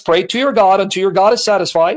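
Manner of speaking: ordinary talk, nothing marked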